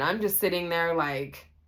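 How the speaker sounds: usual speaking voice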